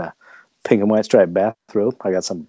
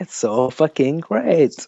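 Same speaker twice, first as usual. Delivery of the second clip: put-on high, pitched-up, full old lady voice; 7 semitones higher than usual. Moving on to the next number, the speaker does the Gladys voice. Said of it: "How was that Gladys voice?".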